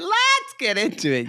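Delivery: put-on loud, shrill, very high-pitched yell. Teasing the other host for being too loud, the speaker imitates their loud shout. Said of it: "You went".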